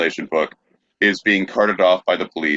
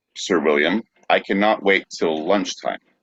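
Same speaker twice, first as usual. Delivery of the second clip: ordinary talk, nothing marked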